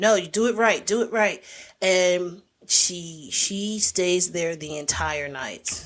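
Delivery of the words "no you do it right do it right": hard-driving, shouted drill-sergeant yell. Retelling a chef drilling a cook overnight: imitating someone yelling. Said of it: "yelling at her".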